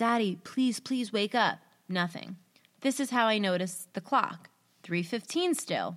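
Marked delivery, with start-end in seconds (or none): 0.0-1.6 put-on quiet whisper. Retelling trying to wake a sleeping dad: imitating a quiet whisper. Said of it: "I whisper very quietly".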